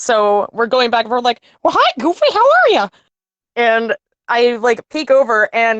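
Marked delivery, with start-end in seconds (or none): 1.6-2.9 squeaky, very high-pitched voice. Retelling talking to a brother on a bus ride, in a Mickey Mouse voice. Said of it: "I am talking in a Mickey Mouse voice".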